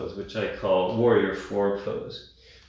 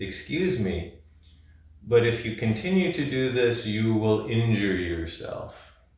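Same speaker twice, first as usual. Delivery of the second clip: usual speaking voice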